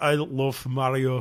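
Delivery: put-on Russian accent. Mimicking how the other speaker slipped into an accent: retelling a russian accent. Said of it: "You just kind of went there. You're like".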